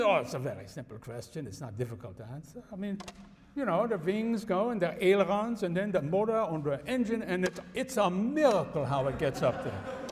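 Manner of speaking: put-on German accent.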